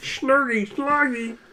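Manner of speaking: slurred, garbled frog puppet voice. Asked to do Hermit the Crog, the speaker gives it a try: Kermit the Frog having a stroke. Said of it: "It's pretty much Kermit the Frog, but he's having a stroke".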